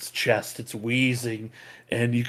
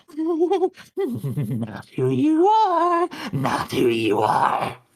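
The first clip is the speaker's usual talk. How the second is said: very high, very slow, drawn-out giggling creature voice; 5 dB louder than usual. Voicing a creature heard through the caves, in between fits of laughter: giggling creature voice. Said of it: "in between fits of laughter".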